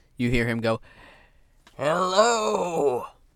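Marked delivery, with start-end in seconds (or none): 1.8-3.1 very high, raspy, drawn-out yell. Voicing an older man calling out to the group: raspy voice. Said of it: "That's a rather raspy voice".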